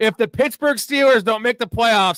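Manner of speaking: all-out shouting, loud and high. Yelling a Steelers playoff take in all caps, Stephen A. Smith yelling. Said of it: "I should yell it".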